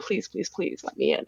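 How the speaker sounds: acted-out, hushed, breathy, begging whisper. Retelling pleading with a department head to be let in: retelling a plea. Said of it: "pleading with him".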